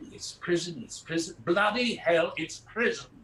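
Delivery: put-on polished, posh British Received Pronunciation accent. Retelling a time they blew a dialect in a show, speak in British Received Pronunciation. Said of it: "very good received pronunciation in British".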